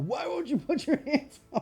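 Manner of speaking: put-on hollering voice. Retelling how a dad hollered at Rocky on screen: imitating a hollering dad. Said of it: "that's all my dad would do is just holler".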